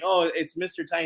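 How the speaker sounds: plain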